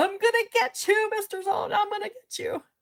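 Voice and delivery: put-on very high-pitched hollering. Retelling the principal yelling from the stands: imitating the principal yelling. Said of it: "the principal's running behind him".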